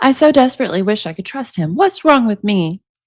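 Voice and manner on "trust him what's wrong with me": ordinary talk, nothing marked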